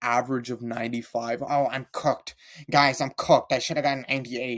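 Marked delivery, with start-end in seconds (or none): 1.4-4.6 mock nerdy student voice. Ranting about classmates, mocking a nerdy classmate. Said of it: "every other dork in your class".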